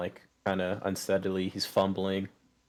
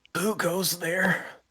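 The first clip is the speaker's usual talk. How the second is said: put-on high, slow, drawn-out startled old farmer voice. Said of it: "Yeah, it's like".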